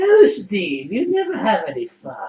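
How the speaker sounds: pitch swinging widely up and down. Retelling what the Joker seemed to say while chasing: Mark Hamill Joker voice. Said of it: "it was the Mark Hamill one".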